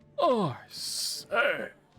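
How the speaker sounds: very high, loud, posh aristocrat noble voice. Voicing a noble who addresses someone as sir, in a waspy noble voice. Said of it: "That's that waspy noble".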